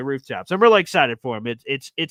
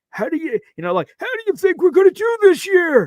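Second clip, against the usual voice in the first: put-on very high, loud elderly old man voice; 5 dB louder than usual. Retelling what a man with a walker asked, in an old man voice. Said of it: "I'm talking in an old man voice".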